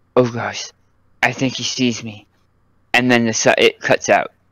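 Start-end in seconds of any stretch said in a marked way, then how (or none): 0.2-2.3 soft, hushed, barely audible voice. Narrator describes a message over crackling comms: Puck's quiet voice. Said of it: "Puck's quiet voice say".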